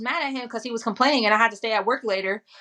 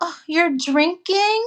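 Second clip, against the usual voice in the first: play-acted forlorn, sad, pitched-up little voice; 7 semitones higher, 3 dB louder than usual. Retelling how Armani came downstairs after watching the live, imitating Armani's sad voice. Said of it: "a sad voice or something".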